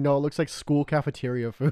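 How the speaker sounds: usual speaking voice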